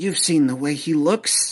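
conspiratorial, secretive whisper. The pixie flies up to the player to confide something, conspiratorial whisper. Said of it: "gives you a conspiratorial whisper".

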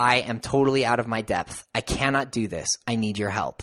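put-on humble pleading voice. Retelling a scene where Picard asks Q for help: imitating Picard in complete humility. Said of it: "in complete humility".

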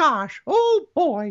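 squeaky, high, slow, swooping voice. A speaker recalls auditioning for Disney character voices and shows theirs: Mickey Mouse voice. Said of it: "that was my Mickey".

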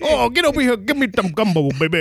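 Creole-accented speech. Speaker demonstrates the accent they call the dumbest; mock Creole accent. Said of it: "the dumbest accent is definitely Creole accent".

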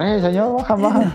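acted-out yelling. Retelling someone yelling at the driver of a departing bus, retelling a shout. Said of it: "empezó a gritar".

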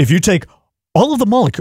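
dramatic pause-laden delivery. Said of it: "he has those little dramatic pauses".

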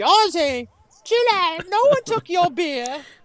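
very high, chiding, scolding voice. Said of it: "I'm just going to be like".

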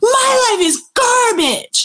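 very high, venting yell. Retelling yelling at the sky and lake beside an angry companion, retelling own yell. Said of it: "yell at the sky and the lake".

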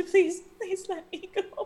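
high, terrified, frightened, begging tone. Voicing a terrified character begging to be let go: terrified pleading. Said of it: "she seems terrified".

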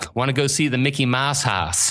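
imitated Pittsburgh accent. Retelling a family trip to Disney, quoting the grandmother, in Ruth's Pittsburgh accent. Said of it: "that's how I know a Pittsburgh accent".

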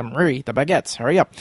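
ordinary talk

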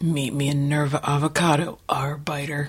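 clumsy, unconvincing male voice, slow. Thanking the hosts while pretending to be the guest Rich: imitating Rich, bad guy voice. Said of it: "And he doesn't talk like that at all".

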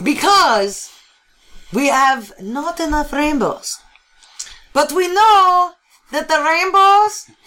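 put-on accent blending French and Taiwanese. Speaker transitioning into an accent mid-speech, as a listener points out: French Taiwanese accent. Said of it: "You're totally transitioning into a French Taiwanese accent".

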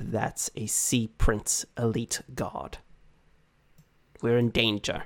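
muttered under breath. A game narrator voices a character's line, muttered under his breath. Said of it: "under his breath say".

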